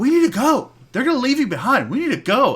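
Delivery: high-pitched whisper-yell. Retelling a young girl urging her older brother to leave, imitating a whisper-yell. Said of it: "whisper yelling".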